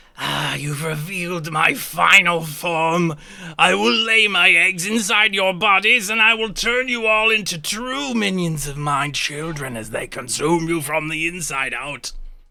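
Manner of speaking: sibilant, hissing bug-monster creature voice. Game narrator voices a tiny creature in the wall hissing at the players: hissing insect creature. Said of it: "the creature kind of hisses at you".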